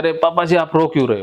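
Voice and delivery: normal talking voice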